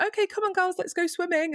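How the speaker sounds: very high, acted, forced bright smiley cheer. Retelling the mother's words as the father drove off: imitating a masked, smiley tone. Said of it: "masked, smiley".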